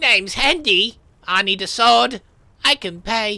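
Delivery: loud, slow, incongruously high-pitched voice. Narrator voicing a man standing in your doorway: Hendy's incongruously high voice. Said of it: "the man's voice is pitched incongruously high".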